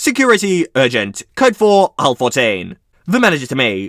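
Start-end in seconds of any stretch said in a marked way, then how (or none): none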